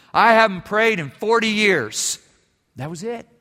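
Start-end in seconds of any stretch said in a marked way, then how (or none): 0.1-2.1 put-on voice, very loud and booming. Storyteller quotes a doctor answering a question about prayer; very loud voice. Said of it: "with a very loud voice".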